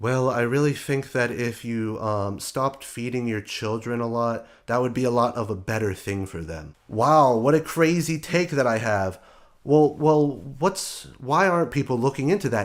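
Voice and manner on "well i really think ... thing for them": mock quiet, calm delivery, lower. Imitating a guy sitting there quietly giving advice: imitating a quiet calm speaker. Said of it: "a guy sitting there quietly going".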